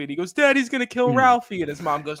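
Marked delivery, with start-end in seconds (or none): 0.3-1.6 very high, tearful, sobbing crying voice. Retelling a movie scene of a boy under the sink: imitating someone crying. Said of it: "and he's crying 'cause he thinks".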